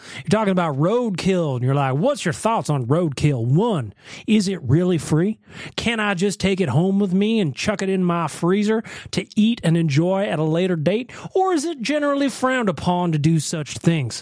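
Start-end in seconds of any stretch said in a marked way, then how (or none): 1.9-14.2 fake, put-on southern drawl, slower. Teasing the other speaker by repeating their question, in a mock southern drawl. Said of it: "some kind of southern drawl".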